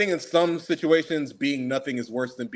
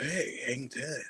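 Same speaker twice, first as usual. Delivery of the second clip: understated, underplayed, very low-key delivery; 10 dB quieter than usual. Doing impressions of two actors said to share a voice: Keanu Reeves impression. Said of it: "Keanu's just".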